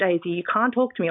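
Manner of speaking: ordinary talk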